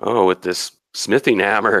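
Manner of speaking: ordinary talk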